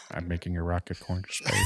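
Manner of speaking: low, deep, put-on South African accent. Asked for a South African accent, imitating Elon Musk. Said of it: "Elon Musk and be like".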